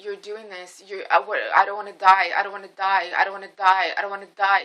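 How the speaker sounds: put-on tearful crying voice. Retelling what a panicked man said on the phone: imitating someone crying and begging. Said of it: "crying, crying, begging me for forgiveness".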